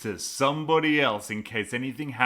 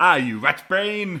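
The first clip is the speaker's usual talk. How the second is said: poorly done, bad put-on English accent; 5 semitones higher, 6 dB louder than usual. Try out a line that he said in the movie, in a bad English accent. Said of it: "It's it's a bad accent".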